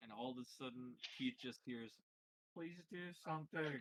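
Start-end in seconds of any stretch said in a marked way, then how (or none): 2.5-3.8 mumbled aside, words barely shaped. Voicing a character who asks Keith for help: mumbled under the breath. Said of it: "mumbled under his breath towards Keith".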